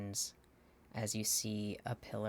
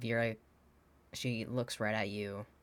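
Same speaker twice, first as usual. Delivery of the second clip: normal talking voice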